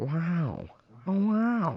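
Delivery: each wow long and drawn out. Retelling a guest's impression: imitating Owen Wilson. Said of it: "when he started going".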